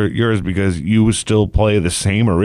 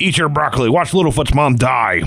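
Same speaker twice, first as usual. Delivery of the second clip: wicked, menacing, evil cartoon villain voice; 4 semitones higher than usual. Acting out forcing a child to watch a sad film: mock evil cartoon villain voice. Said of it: "that just sounded so evil".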